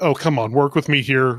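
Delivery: ordinary talk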